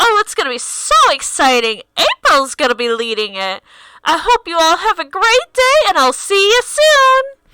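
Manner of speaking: ringing announcement voice. Voicing an announcement to campers that rings out: voice ringing out to campers. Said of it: "suddenly you hear a voice ring out".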